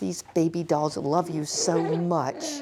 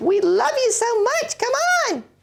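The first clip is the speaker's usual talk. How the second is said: put-on very high, squeaky, loud baby-doll cheer; 6 dB louder than usual. Voicing two waiting baby dolls urging a child on: voicing two baby dolls. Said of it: "They're both waiting and saying".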